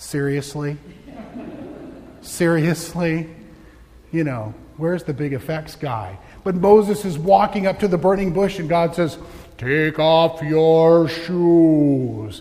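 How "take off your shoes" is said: very slow, deliberate, raised, with "shoes" drawn out. Retelling Moses at the burning bush, the speaker voices God speaking really slowly. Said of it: "God spoke really slowly".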